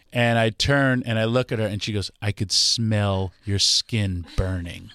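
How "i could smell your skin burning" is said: genuinely disgusted, recoiling tone. Speaker retells what a woman told him after he turned to her, mock-disgusted tone. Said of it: "she says it with such disgust".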